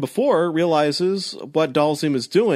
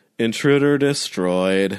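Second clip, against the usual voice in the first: put-on disinterested, bored-sounding computer voice; 6 semitones lower than usual. Speaker recapping a scene to co-hosts, imitating a disinterested computer voice. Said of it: "very disinterested computer voice".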